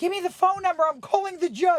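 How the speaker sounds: very high, very loud, shrill, hysterical shouting. Recalling being 13 as police arrested their father; retelling a hysterical demand. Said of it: "I was like hysterical".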